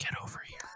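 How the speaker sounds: soft, hushed, very quiet ASMR whispered voice. Trying out a Mortal Kombat ASMR line: ASMR whisper. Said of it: "Mortal Kombat A S M R?".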